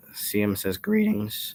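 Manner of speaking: voice cracking. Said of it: "what a voice crack".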